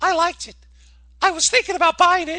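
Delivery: very high-pitched put-on woman's voice. Retelling what a woman said after finding money, put-on woman's voice. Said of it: "let me use my woman voice".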